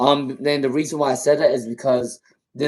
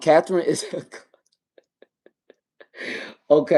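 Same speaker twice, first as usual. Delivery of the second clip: giggling, laughing through the words; 3 semitones higher than usual. Reading viewer messages aloud, laughing while talking. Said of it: "I don't know why I'm laughing so hard".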